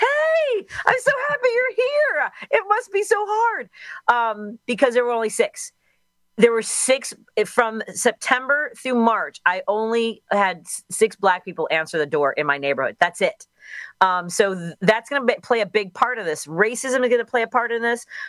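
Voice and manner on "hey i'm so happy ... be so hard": very high, gushing, overeager tone. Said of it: "My tone of voice would be like".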